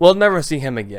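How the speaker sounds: plain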